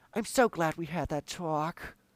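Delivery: put-on breathy actress voice. Doing an impression for podcast listeners: Jennifer Coolidge impression. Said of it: "my Jennifer Coolidge impression".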